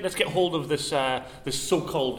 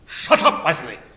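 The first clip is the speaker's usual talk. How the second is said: booming, very loud bellow at full volume; 8 dB louder than usual. Asked to do an impression: Patrick Stewart impression. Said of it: "can you do Patrick Stewart?".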